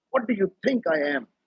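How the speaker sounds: high-pitched, furious, angry shouting outburst. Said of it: "he shouted at her and he said".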